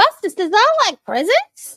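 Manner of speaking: very high, shrill, loud, annoying put-on dog voice. Opening a package and speaking to Bustus, in a silly dog voice. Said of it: "Do you like my dog voice?".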